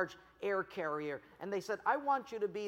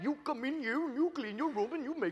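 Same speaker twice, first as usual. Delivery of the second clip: put-on Indian accent, pitched up; 7 semitones higher than usual. Retelling what a boy's dad said to him, imitating an Indian accent. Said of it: "his dad spoke kind of the Indian dialect".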